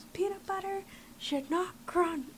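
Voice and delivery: high screaming yell at the top of the lungs. Retelling what a choir director would scream: imitating someone screaming. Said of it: "would scream at the top of his lungs".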